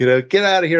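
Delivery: play-acted, high-pitched hollered yell. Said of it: "are yelling at me like".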